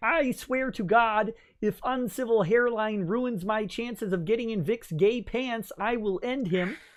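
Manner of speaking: high, froggy puppet character voice. Doing a voice that people sometimes ask you for, in a Kermit the Frog voice. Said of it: "Kermit the Frog says".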